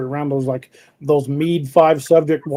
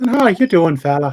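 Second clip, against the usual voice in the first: put-on Irish brogue, Dublin lilt; 3 dB louder than usual. Imitating how people from Dublin talk: imitating an Irish brogue. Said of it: "a wee bit of Irish brogue".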